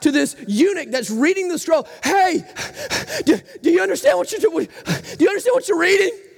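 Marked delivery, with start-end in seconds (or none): 2.0-6.1 pitched-up, exasperated, winded and fed up. Retelling the Bible story, the apostle calls out to the eunuch reading the scroll, exasperated, exhausted Philip shouting. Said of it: "exasperated, exhausted Philip shouting out".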